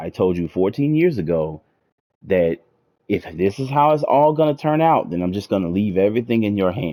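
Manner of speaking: ordinary delivery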